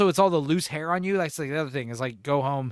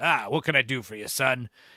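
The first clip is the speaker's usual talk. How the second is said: imitated old man voice. Picturing an old guy cutting hair and greeting a customer: imitating an old guy barber. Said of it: "an old guy".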